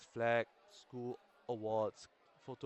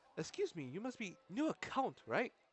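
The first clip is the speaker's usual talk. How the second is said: very high-pitched, swooping character voice; 9 semitones higher than usual. Someone clutches the narrator's shoulder and speaks up in a high-pitched voice. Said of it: "a high-pitched voice follows".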